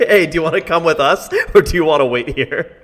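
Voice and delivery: high, loud yell called across. Calling across to a goblin companion in character: yelling to a goblin. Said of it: "I yell to Frogtook in Goblin".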